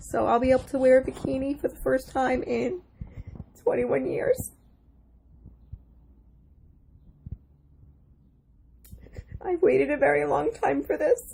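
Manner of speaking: crying, tearful with joy. A patient speaks after her surgery, crying tears of joy. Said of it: "These are tears of joy".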